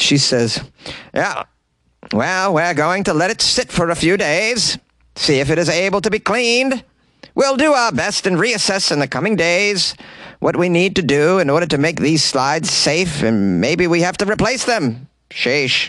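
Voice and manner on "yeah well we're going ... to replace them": Alaskan accent impression. Reading out a woman's statement in a put-on Alaskan accent. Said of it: "Did I nail that Alaskan accent?".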